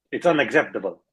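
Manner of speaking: put-on Italian accent. Asked to do an impression and say a given line, in an Italian accent. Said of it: "that was Italian".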